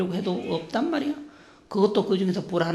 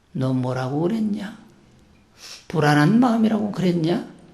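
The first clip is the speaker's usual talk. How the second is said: put-on Jeolla dialect voice. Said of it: "달마대사가 전라도 사투리를 이렇게 썼는지".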